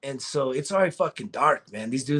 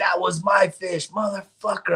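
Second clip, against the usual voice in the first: angry tone, higher pitch; 5 semitones higher than usual. Retelling taunting a cousin over a caught fish: imitating own angry words. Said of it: "I was pissed".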